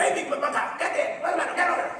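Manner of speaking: very high-pitched, fatherly calling out. Retelling how his dad called him over, imitating dad's loud voice. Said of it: "big, proud Texan man, loud voice".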